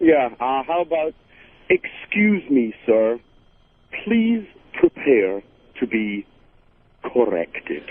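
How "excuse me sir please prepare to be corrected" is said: menacing, very slow, drawn-out, word by word. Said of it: "You got a catchphrase for Anthony?".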